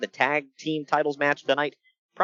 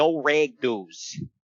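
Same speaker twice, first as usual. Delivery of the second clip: put-on thick, laid-on Minnesota accent; 2 semitones lower than usual. Retelling a security guard's dress-code rule on a bus, in thick Minnesota-Wisconsin accent. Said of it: "he had a thick like Wisconsin, Minnesota kind of accent".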